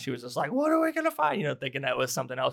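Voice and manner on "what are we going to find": mock very high, loud, flipped-out outburst. Retelling a mother finding hidden movies: imitating mom flipping out. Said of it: "She flipped out".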